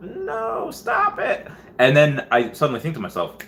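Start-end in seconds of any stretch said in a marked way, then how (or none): 0.0-1.5 put-on very high, whiny, pleading little-girl voice. Retelling waking up in the night, imitating own whining like a little girl. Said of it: "being like a little girl".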